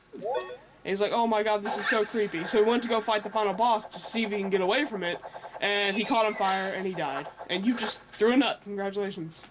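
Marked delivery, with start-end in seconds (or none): none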